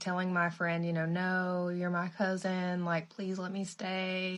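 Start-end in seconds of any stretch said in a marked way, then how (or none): 1.0-4.4 slow, crying, tearful pleading voice. Retelling how a woman cried to the speaker's friend, imitating a crying plea. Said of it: "Irma Jean starts crying".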